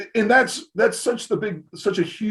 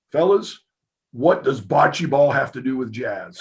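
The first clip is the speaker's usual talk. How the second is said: put-on sudden stern tone, lower; 5 semitones lower than usual. Retelling how a jazz teacher confronted the class: imitating a teacher's sudden stern demeanor. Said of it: "his demeanor changes immediately".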